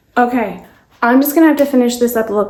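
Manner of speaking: words tumbling out quickly. Speaker rushing to finish a look before a plumber arrives, talking very fast. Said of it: "I'm talking so fast".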